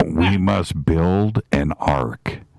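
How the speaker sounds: acted whispering. Teasing that a listener can be heard whispering, imitating Kevin whispering. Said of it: "tell Kevin we can hear him whispering".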